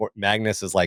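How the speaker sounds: plain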